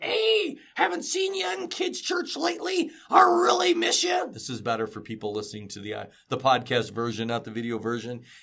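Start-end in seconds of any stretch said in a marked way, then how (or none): 0.0-4.3 very high-pitched voice. Acting out a phone message to a kid, voicing Gus. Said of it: "Gus will call a kid and be like".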